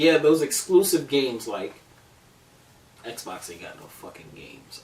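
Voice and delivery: extremely sarcastic with swooping pitch. Talking with another speaker about exclusive games, extremely sarcastic. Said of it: "this is me being extremely sarcastic".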